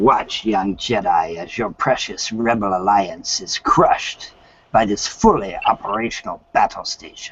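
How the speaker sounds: voice dropped very low. Showing the others an Emperor Palpatine voice. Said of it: "I can do Emperor Palpatine's voice".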